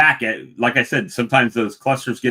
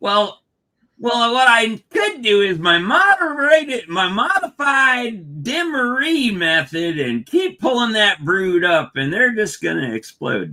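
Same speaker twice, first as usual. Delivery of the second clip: very high, unhurried, drawn-out voice; 10 semitones higher than usual. Talking about pulling brood up in a hive: Charlie impersonation. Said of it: "my best Charlie impersonation".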